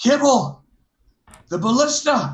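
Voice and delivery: high screamed call-out. Playing a character in a tabletop game, calling to kibble about the ballista: screaming. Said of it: "I'll scream".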